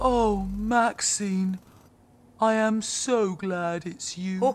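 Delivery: low, deep voice. Greeting a friend while stuck with flat batteries: new deep voice. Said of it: "I love the new deep voice".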